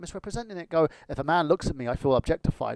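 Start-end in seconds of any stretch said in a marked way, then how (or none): none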